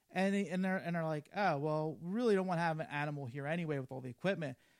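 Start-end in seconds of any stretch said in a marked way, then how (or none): none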